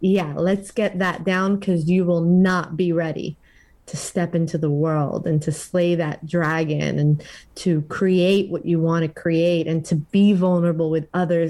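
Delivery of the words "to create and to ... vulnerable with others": normal talking voice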